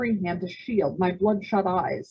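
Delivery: ordinary delivery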